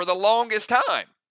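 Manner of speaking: voice jumping up into a squeaky high crack. Describing a new gear piece you'll keep for ages, voice cracking squeaky. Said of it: "my voice just went up, like, really squeaky".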